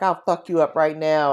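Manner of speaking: put-on aggressive, hostile cursing voice. Retelling a stranger on a train confronting the speaker: imitating a man cursing aggressively. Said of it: "And he was just cursing".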